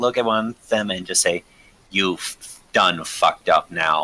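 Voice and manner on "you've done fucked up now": very deep, low, dropped-down voice. Player casting Ray of Frost at one of them, in a very deep voice. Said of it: "in like a very deep voice".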